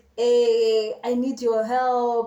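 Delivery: slow, drawn-out, tearful crying voice. Retelling a phone call from someone crying: imitating Savannah crying. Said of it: "She crying on the phone".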